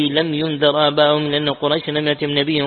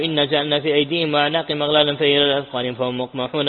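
normal talking voice

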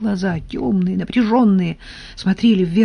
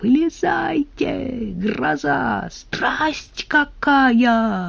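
hoarse, high, very slow cry, "какая" stretched; 6 semitones higher, 4 dB quieter than usual. Kuzya shouts down from above to Anfisa and Kolya, a hoarse shout. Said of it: "хрипло закричал Кузя".

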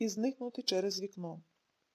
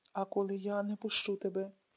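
ordinary delivery

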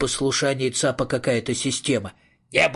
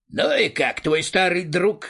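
mocking, sardonic, sarcastic tone, pitched up; 5 semitones higher than usual. Speaking to a companion in a long-familiar routine: sarcastic question. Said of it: "саркастически осведомился Цап".

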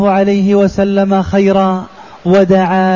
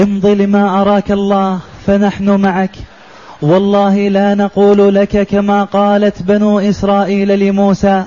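plain

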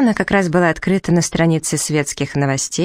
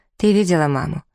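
plain reading voice

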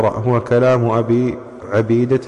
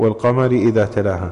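ordinary talk, nothing marked

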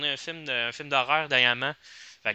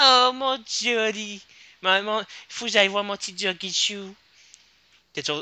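put-on girly voice, pitched much higher; 6 semitones higher than usual. Asked by a friend to do a Harley Quinn voice, she performs it. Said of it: "Une petite voix de blondinette".

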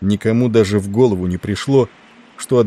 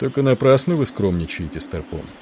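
plain reading voice

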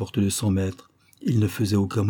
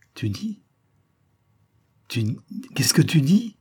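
faint, trembling, faltering stammer, pitched up; 7 semitones higher than usual. A man stammers his question to a woman who just spoke: stammering, faint and trembling. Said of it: "il balbutia d'une voix éteinte, tremblante".

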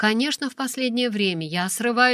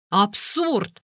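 sudden, explosive outburst. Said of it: "Его вспышка заставила людей за соседними столиками оглянуться".

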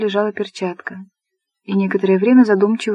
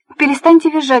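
high, loud shout with composure cracking; 7 semitones higher, 5 dB louder than usual. Polina, unable to pretend calm any longer, yells at Anne; shouting, losing composure. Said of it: "закричала Полина, не в силах больше притворяться спокойной".

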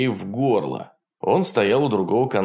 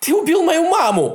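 piercing, very high, loud shriek; 5 dB louder than usual. In a story, the narrator's cousin confronts a gunman: shrieking. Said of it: "завизжал Нил".

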